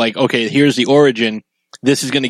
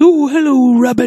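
very high, muted little cartoon bear voice; 13 semitones higher, 4 dB louder than usual. Show what a character's voice in a trailer sounds like, Winnie the Pooh voice. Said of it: "He kind of sounds like Winnie the Pooh".

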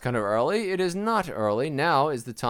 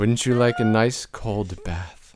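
creepy voice, much lower; 4 semitones lower than usual. Performing one of several voices in a comedy bit, creepy voice. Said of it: "it's so creepy".

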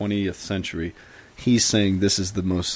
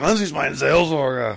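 put-on angry tone, pitched higher; 6 semitones higher than usual. Showing how to say the German title: mock angry German delivery. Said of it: "you have to be kinda angry as you say it".

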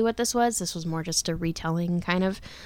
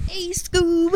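very high, loud, chill hippie voice; 12 semitones higher, 6 dB louder than usual. Quoting a cartoon line after comparing a voice: Shaggy voice. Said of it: "He kinda sounded like Shaggy".

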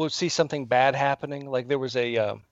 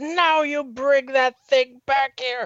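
put-on very high, shrill, loud scream at lungs' top; 12 semitones higher, 5 dB louder than usual. Telling how McCarthy ran up the hill after them, retelling McCarthy's scream. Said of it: "screaming at the top of her lungs".

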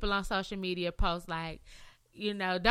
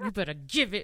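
put-on voice spoken through clenched, gritted teeth; 2 semitones lower than usual. Imitating a mother warning a boy to return a toy, through clenched teeth. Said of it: "with the clenched teeth".

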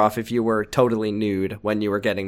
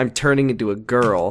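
plain

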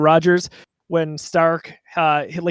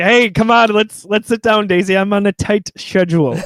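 put-on German accent, higher; 4 semitones higher, 4 dB louder than usual. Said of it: "The German accent".

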